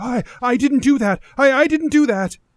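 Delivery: high-pitched, loud, panicked protest.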